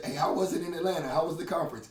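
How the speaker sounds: plain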